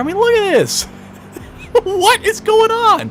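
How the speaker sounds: very high, loud, incredulous, disbelieving cry.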